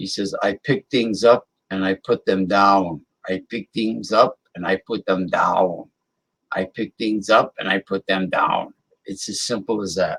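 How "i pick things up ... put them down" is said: put-on German accent in a big muscleman voice. Retelling a line from a fitness commercial: German accent. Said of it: "this big guy with a German accent".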